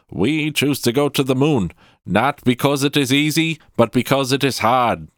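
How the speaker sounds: overblown, poor declamation. Quoting a famous moon speech: bad JFK impression. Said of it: "that's a bad J F K impression".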